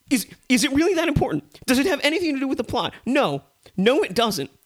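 exasperated, incredulous rant, high in pitch and fast.

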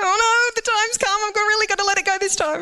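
put-on acted high-pitched child voice, getting a bit panicky. Retelling a child's words as the truck comes: imitating a panicky child. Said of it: "getting a bit panicky".

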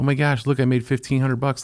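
mock, giddy, bursting with excitement. Retelling a lash artist showing off a paycheck: imitating someone excited. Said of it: "they'd be all excited".

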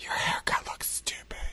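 very quiet, menacing, threatening whisper. Playing a caller on a threats cd, phoning someone hated: whispered threat. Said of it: "when you can just whisper threat".

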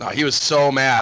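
ordinary talk

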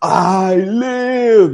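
high, theatrical, dramatic monster voice. Voicing a revived villain's first words: dramatic Frankenstein-style revival line. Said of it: "you get your Frankenstein thing here".

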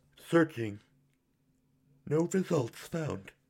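glitchy, malfunctioning robotic voice-assistant voice. Speaker playing a man with a computer in his arm, asked to search: broken Siri-like voice. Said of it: "he sound like a really broken Backstreet version of Siri".

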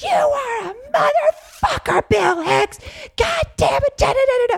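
very high, shrill, top-of-lungs screech. Telling how a woman burst from the green room at the man on stage, retelling her top-of-lungs screech. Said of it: "screeching at the top of her lungs".

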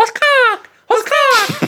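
very high, loud, shrill bird-call shriek. Acting out a call screamed in the woods, like a bird call: screamed loudly like a bird call. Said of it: "being screamed loudly in the woods".

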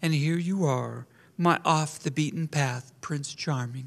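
high, cooing, disarming, flattering tone. Narrator reads the maiden speaking to Buckeye: cooed. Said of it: "she cooed".

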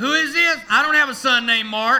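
dismissive, curt brush-off tone. Retelling how a dad answered a grown child asking for money: imitating a dad hanging up. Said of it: "He'd be like".

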